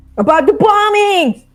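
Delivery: very high, shrill, top-volume yell. In a role-play scene, answering what sort of information: shouting as loudly as possible. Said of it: "She shouts as loudly as humanly possible".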